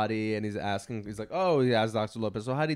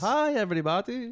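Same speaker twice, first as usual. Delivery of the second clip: very high-pitched put-on cartoon voice; 12 semitones higher than usual. Talking about corrupt doctors with others, the speaker does a Dr. Nick impression. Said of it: "Hi, yeah. Dr. Nick".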